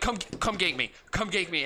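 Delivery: mock high, nervous, panicked, freaked-out voice. Retelling tournament nerves, acting out past panic. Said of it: "and like I was freaking out".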